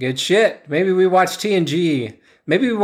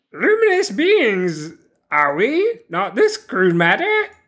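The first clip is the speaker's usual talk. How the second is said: put-on small, high, pitched-up, sage-like old master voice; 6 semitones higher than usual. Asked to repeat a movie quote in Yoda's voice so the listener can tell, Yoda voice. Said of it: "Can you do that in Yoda's voice".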